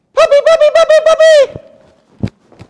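eager, excited, very high, very loud, very slow. Speaker calls the puppy to come while running away from him; very excited voice. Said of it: "I'm going to say a very excited voice".

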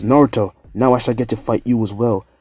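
plain

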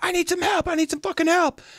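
mock, shrill, very high yell. Retelling how his brother yelled at a festival, retelling a yell for help. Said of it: "My brother's yelling like".

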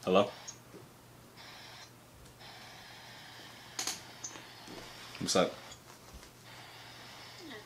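sad, downcast, barely audible, near-whispered. In an acted phone call, the speaker answers sounding sad. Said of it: "Why you sound so sad?".

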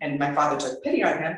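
plain

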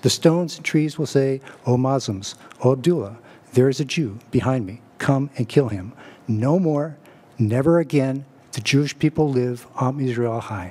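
ordinary delivery

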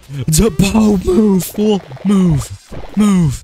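very high, silly character voice, yelling.

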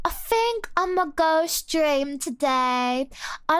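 put-on British accent. Saying a favorite phrase in a British accent. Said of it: "my favorite thing to say with a British accent is like".

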